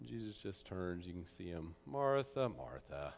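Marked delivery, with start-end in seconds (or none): 1.9-3.1 put-on, acted knowing tone. Retelling a Gospel scene, the speaker voices the reply to the complaining sister, acting out a knowing tone. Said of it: "You just hear this knowing in his voice".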